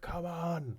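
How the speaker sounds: loud, high, urgent beckoning shout. Voicing prisoners beckoning the players toward the rope: prisoners shouting. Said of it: "shouting at you to get your asses over there".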